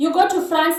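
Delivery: ordinary delivery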